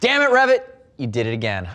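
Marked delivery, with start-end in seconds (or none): 0.0-0.6 mild, half-shouted exclaiming voice. Host opening a Decide and Ride pants review video, yelling. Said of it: "I'll stop yelling now".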